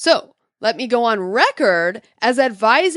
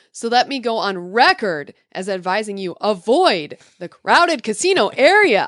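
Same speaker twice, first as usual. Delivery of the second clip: ordinary delivery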